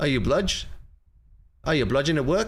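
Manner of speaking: terrible, bad, fake put-on Australian accent. Trying out Australian slang about bludging in a terrible Australian accent. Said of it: "that's my terrible Australian accent".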